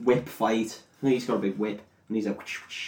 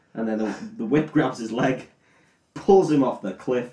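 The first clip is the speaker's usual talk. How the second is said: ordinary delivery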